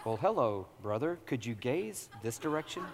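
very quiet, muted church tone, subdued enthusiasm. Quoting someone greeting a brother, mock church tone, muted enthusiasm. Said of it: "in a very sort of church tone, muted enthusiasm".

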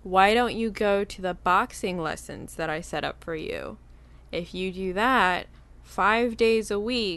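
usual speaking voice

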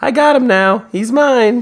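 high, loud gloating voice. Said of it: "trophy big game hunting for them".

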